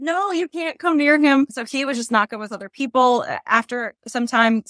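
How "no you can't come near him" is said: frantic, high-pitched screamed yell. Retelling warning off a woman running toward the dog, reenacting their own scream. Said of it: "I'm screaming like".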